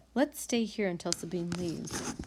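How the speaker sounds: usual speaking voice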